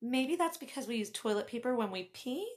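soft preschool-teacher voice. Retelling a reply to his comment, in a gentle preschool-teacher voice. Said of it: "lifting my voice an octave on the word pee, gently, like a preschool teacher".

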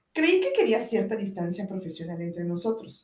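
ordinary delivery, nothing marked

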